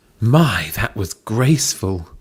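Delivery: slow, drawn-out, exclaiming aloud. Reading a story aloud, giving the doctor's line, exclaiming. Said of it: "exclaimed the doctor".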